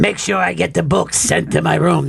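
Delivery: rough, creaky put-on voice. Girls mimicking a man's request about a book, imitating him. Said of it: "they would show up and go like this".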